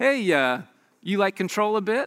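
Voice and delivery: mock playful ribbing, light and joking. Retelling what people jokingly ask you, retelling a joking tease. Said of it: "they just jokingly go".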